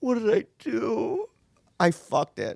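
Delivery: very high, very slow, weepy, tearful despair. Retelling the moment after hanging up, in tears: imitating own tearful regret.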